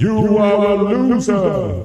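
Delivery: echoey announcer voice. Planning a stream sound effect, the speaker demonstrates an echoey voice. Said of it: "A bit of echo. A bit of reverb".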